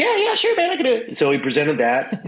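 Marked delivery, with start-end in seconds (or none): 0.0-1.2 very high, squeaky, yappy little voice. Retelling asking Pick for a banana flavor, doing a high-pitched Michael Pickett voice. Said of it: "talks like a chihuahua, just high pitched sound".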